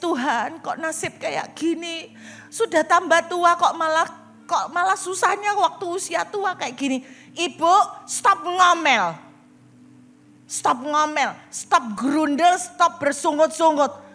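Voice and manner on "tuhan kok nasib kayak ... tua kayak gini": mock weeping, tearful, crying voice. Retelling how a woman says she prays every day: imitating a tearful, crying prayer. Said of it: "Ya saya nangis".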